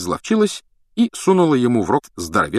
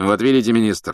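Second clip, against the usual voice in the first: plain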